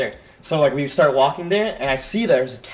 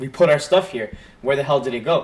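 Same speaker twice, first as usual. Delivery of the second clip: usual speaking voice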